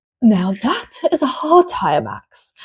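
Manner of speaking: slow, swooping nature-documentary narrator delivery. Retelling a team radio reply to Max: imitating GP as a nature documentary narrator. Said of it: "really sounded like a nature documentary".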